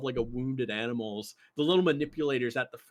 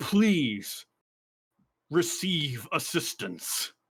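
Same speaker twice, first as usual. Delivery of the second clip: machine-like mechanical robot voice; 3 semitones higher than usual. Voicing a mech that answers the pilot: booming mech voice. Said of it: "As the voice speaks".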